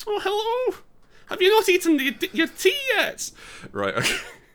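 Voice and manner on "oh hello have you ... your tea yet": put-on old Scottish lady voice, much higher, louder. Speaker tries out a character for the game in a Scottish old lady voice. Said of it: "it's always an old lady as well".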